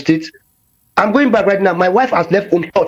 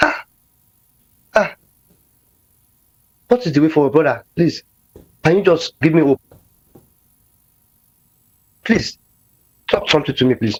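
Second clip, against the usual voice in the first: tearful, crying while talking; 2 semitones lower than usual. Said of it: "I'm crying".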